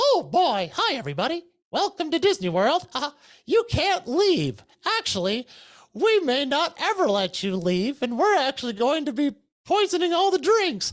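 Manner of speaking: very high-pitched sing-song voice. Retelling playing a mean Mickey Mouse security officer at Disney World: Mickey Mouse voice. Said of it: "I turned into Mickey Mouse and I was like".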